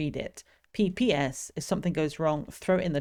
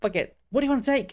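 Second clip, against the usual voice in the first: shrill, very high shout; 8 semitones higher, 4 dB louder than usual. Reading a waitress's line to a customer aloud, yelling in his face. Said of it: "Should we just yell in this man's face?".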